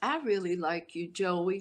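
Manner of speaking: slight put-on southern drawl. Retelling what a woman he was talking with said to him, little southern drawl. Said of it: "She had like a little southern drawl".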